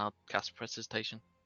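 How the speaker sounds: ordinary talk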